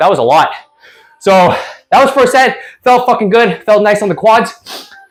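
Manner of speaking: winded, panting between phrases, out of breath. Talking to camera right after finishing a set, out of breath. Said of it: "I'm like out of breath".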